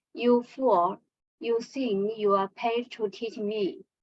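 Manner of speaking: ordinary talk, nothing marked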